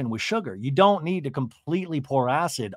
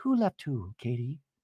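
soft, gentle, mock-earnest concerned voice; 3 semitones lower, 6 dB quieter than usual. Recapping a show, retelling Jen's question to Katie, in a mock-concerned voice. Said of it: "This is my concern voice".

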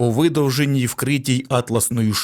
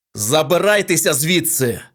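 commanding, authoritative tone; 3 semitones higher than usual. Narrator voicing Feldman to the people in the professor's room, commanding. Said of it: "наказав Фелдман".

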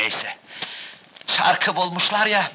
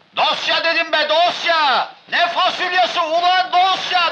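shouting, much higher pitch; 9 semitones higher than usual. Told to shout, the speaker shouts back at the other person: shouting. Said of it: "Daha nasıl bağırayım?".

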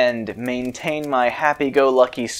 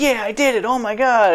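mock very high, excited, thrilled triumphant cheer; 10 semitones higher than usual. Retelling finally beating a tough boss: imitating own past excitement. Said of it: "the excitement of, like".

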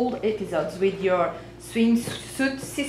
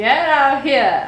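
slow, loud, drawn-out call. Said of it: "I didn't say it like that".

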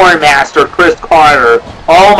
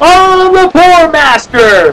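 very high, stretched, drawn-out cheering cry; 12 semitones higher than usual. Retelling a wrestler cheering his catchphrase at a match: retelling a wrestler's cheer. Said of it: "this badass is cheering".

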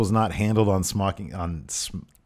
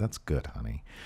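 put-on, patronizing talking down with faint approval; 7 semitones lower, 10 dB quieter than usual. Joking about how a wife reacts to homemade tights: imitating Maria speaking condescendingly. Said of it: "she very condescendingly said".

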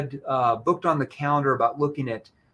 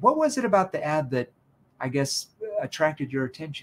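genuinely interested, curious, inquisitive tone; 3 dB quieter than usual. Showing tone when asking what attracted someone to an ad: curious tone. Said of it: "that's a curious tone".

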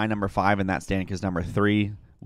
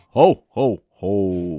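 loud, booming, big character laugh; 8 dB louder than usual. Opening with a playful ho ho ho: Santa Claus ho ho ho. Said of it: "Give me your best ho, ho, ho".

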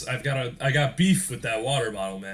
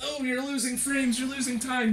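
very high, dumb-sounding mocking squeak; 12 semitones higher than usual. Speaker voicing an imagined critic during a run, in a put-on stupid mocking voice. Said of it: "me talking in a stupid voice".

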